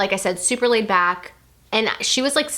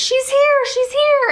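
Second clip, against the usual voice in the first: mock very high, shrill, stretched-out, drawn-out screaming; 5 dB louder than usual. Retelling a sister screaming during the birth: imitating someone screaming. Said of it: "I hear my sister screaming at me".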